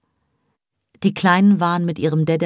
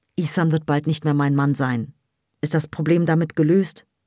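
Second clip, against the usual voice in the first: ordinary delivery, nothing marked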